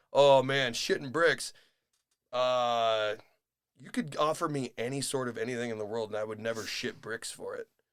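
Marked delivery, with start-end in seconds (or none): 0.1-1.5 loud Midwest accent with a light twang. Showing how the phrase needs a little Midwest in it: Midwestern twang. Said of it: "a little bit of twang in it. You got to get a little bit of Midwest in it".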